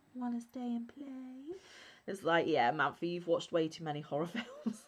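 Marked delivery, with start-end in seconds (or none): 0.2-1.6 put-on soft, eerie, spooky little ghostly child voice. Exploring old tunnels, voicing what she half expected to hear: ghostly child's voice. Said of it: "a ghostly child's voice say".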